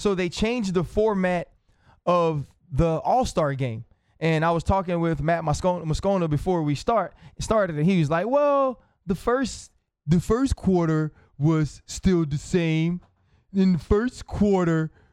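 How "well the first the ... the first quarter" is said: just talking plainly in a normal voice. Retelling what a colleague said before the show: imitating Matt Moscona's voice. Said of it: "that's how it sounded to me when Matt was doing it".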